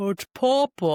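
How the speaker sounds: goofy, dopey clown voice, high and loud. Describing a film scene, acting out the dad's line in a dopey voice. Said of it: "his voice was so dopey".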